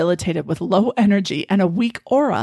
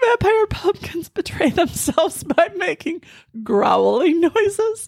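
very high-pitched speech broken by laughter; 10 semitones higher than usual. Reading a passage aloud and commenting on it, reading while laughing. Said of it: "I guess I can't read this without laughing".

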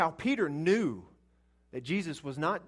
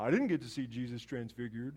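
mock mopey, downbeat, gloomy complaining voice; 5 semitones lower, 4 dB quieter than usual. Voicing the listener's complaint about not seeing Jesus: Debbie Downer voice. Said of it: "in your Debbie Downer voice".

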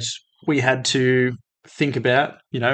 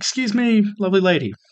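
mock-polite, gentlemanly courtesy, pitched up; 7 semitones higher than usual. Retelling what he and Oscar said to a lady, mock-polite. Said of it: "Oscar and I being the very responsible young men".

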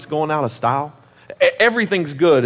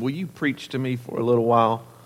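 soft, low, sugar-sweet voice; 4 semitones lower, 5 dB quieter than usual. Preacher retelling a woman's late-night phone request: imitating a sweet voice. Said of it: "In the sweetest voice".

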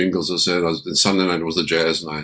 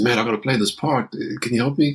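put-on nervous man's voice, much higher; 6 semitones higher than usual. Retelling a sweating bass player asking for help with a part, imitating a nervous man. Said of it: "He's all nervous".

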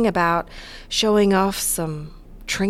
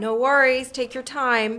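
put-on abrupt switch to American accent; 4 semitones higher than usual. Cassie answers someone waiting on the other end, sudden American accent. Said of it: "You sounded so American suddenly".

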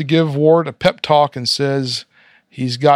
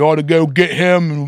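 put-on cartoon character accent. Retelling a cartoon scene, trying Kay's line again, Kay accent. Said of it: "let me try that with the Kay accent".

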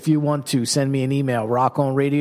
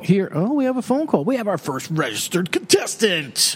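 put-on swooping, pitched-up AM radio announcer voice; 5 semitones higher than usual. Radio host announcing a caller on air, in an AM radio announcer voice. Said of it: "that was my AM radio announcer's voice".

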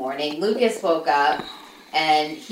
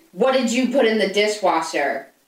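imitated, mock-angry voice; 4 semitones higher than usual. Retelling how he called Lucas downstairs, imitating his angry dad voice. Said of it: "in his angry dad voice".

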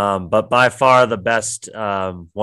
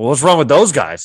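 high, loud, bristling, put-on defensive delivery; 5 semitones higher, 6 dB louder than usual. Retelling how a man reacted after being told about his shirt, mock-defensive reply. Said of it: "gets all defensive".

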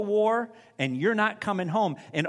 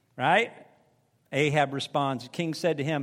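ordinary delivery

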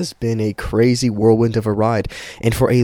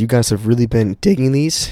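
voice cracking and breaking. Podcast host opening this week's episode for listeners, voice cracking. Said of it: "Voice crack".

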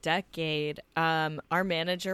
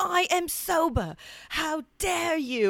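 acted, much higher-pitched mock screaming; 11 semitones higher, 4 dB louder than usual. Telling a story about one man screaming at another who is drinking, retelling a scream. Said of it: "[name] was like screaming at him".

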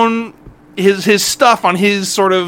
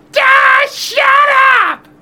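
put-on very high, shouted yell; 3 dB louder than usual. Retelling a son yelling from across the house: imitating son yelling. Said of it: "my son is yelling at me".

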